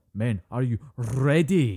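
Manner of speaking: put-on loud, drawn-out, overdone thick Scottish accent. Mimicking Pine's movie line to his men: Pine's overdone Scottish accent. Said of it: "instead of saying ready, in a normal Scottish accent, he goes ... Trying to push the accent a bit too much".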